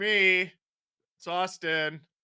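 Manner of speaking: awkward, very slow delivery. Answering a viewer's request for an impression from a video: Auston Matthews impression. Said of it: "give your best Matthews impression from that stupid video".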